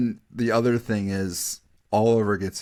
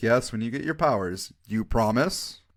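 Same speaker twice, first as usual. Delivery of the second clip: ordinary delivery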